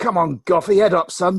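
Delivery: put-on loud high shout. Retelling a shout from the crowd to a bowler: retelling a loud shout. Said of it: "I shouted really loudly".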